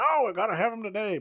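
acted, very high, loud, hammy movie scream. Describing a movie with intentionally corny dialogue, act out a character's line, imitating a corny movie scream. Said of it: "He starts screaming".

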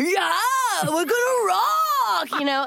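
high put-on surfer dude drawl, "rock" stretched. Recalling a voice done for a season-two role, using a surfer dude voice. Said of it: "I did a voice that felt like some sort of like surfer dude".

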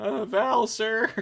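very high, timid, halting, hesitant intern voice. Imagining an intern interrupting val: imitating a hesitant intern. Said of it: "I'm just imagining the intern that had to go get Val".

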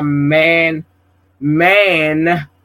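emphasis on the word man. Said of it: "emphasis on man".

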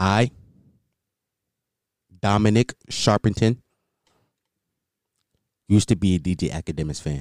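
put-on sultry voice, very low and deep. On a podcast, confessing to the others, in put-on deep sultry vulnerable voice. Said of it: "I'm putting on my deep, sultry, vulnerable voice".

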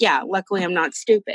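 normal talking voice

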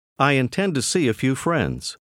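ordinary talk

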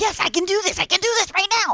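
acted-out giddy outburst, excited, very high-pitched, rushed. Retelling jumping up and down in the seat: imitating own excited self. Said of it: "I was just jumping up and down on my seat going".

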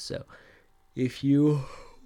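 speaking mid-yawn. On a live stream, the speaker trails off mid-sentence, talking through a yawn. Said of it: "I've been yawning so much".

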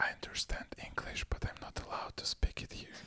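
very quiet, breathy, barely voiced whisper. Retelling what the woman at the window whispered to a wife: imitating a whisper. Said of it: "whispering to my wife".

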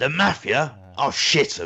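put-on old man voice. Speaker quotes a film line in a put-on accent: geezered-up accent. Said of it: "Geezered it up a bit".

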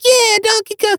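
squeaky, very high-pitched cheering voice. Retelling a movie scene where a crowd cheers: imitating a high-pitched voice. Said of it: "you still hear that high-pitched voice that's like".

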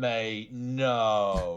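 imitated very slow, burbling speech. Mocking a reality TV contestant's reply: imitating a very slow, burbling reply. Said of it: "very slow, very burbling reply of someone going".

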